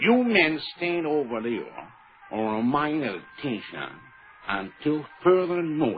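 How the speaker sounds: strained American accent. Never taken for a real American, the speaker gives an attempted American accent. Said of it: "the best I can do is".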